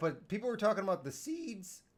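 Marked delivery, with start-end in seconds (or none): 1.1-1.8 voice breaks mid-word on "seeds". A speaker talking casually, voice cracking mid-sentence. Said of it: "Voice crack".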